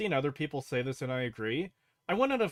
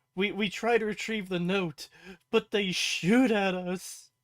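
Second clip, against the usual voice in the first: whining, put-upon complaint tone; 6 semitones higher, 3 dB louder than usual. A speaker mocks how a show's character complains to another character, imitating a whine. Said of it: "have him whine to Lucy about".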